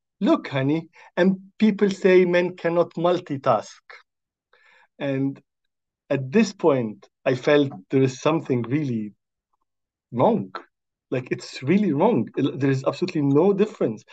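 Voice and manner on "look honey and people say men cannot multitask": mock, pitched-up man's voice. Quoting a man who pointed the speaker out to his wife, retelling a loud remark. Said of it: "pointed with a loud voice".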